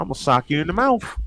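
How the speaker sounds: light put-on southern accent. Saying the line again, this time with a little southern twang. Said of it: "put a little southern twang to it".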